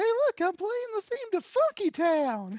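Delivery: very high, loud voice swooping around. Doing an impression of Towelie after another speaker asks for it: Towelie voice. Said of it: "Do your impression of Towelie again".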